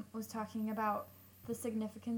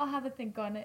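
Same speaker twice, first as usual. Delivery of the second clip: put-on, raised British accent; 2 semitones higher, 5 dB louder than usual. Quoting how Will says this phrase: imitating Will's British accent. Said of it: "In a British accent".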